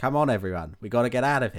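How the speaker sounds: put-on flat, expressionless acting delivery. Retelling a film line: imitating flat acting. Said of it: "no effort put into the acting".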